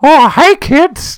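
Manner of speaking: put-on sinister cartoon mouse voice. Picturing a broken animatronic Mickey greeting kids: sinister Mickey Mouse voice. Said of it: "just looked real sinister".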